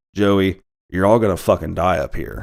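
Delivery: mock deadpan, flat delivery. Retelling a film character's threat to someone called joey: imitating a deadpan delivery. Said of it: "real deadpan, just says".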